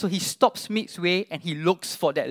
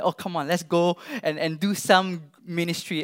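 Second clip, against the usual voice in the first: normal talking voice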